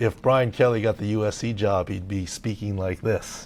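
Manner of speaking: ordinary talk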